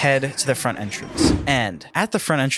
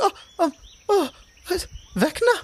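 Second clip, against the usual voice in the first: very high-pitched, shocked, frightened gasping cry. Voicing a character who backs away with hands up, then faints: shocked, frightened gasp. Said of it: "starts backing up and puts her hands up".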